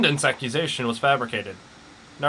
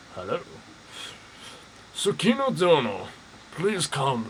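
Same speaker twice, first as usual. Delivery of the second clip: put-on Scottish-accented voice, quieter; 4 dB quieter than usual. Voicing a game character the other player calls Sean Connery: Sean Connery voice. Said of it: "Do I have to voice him?".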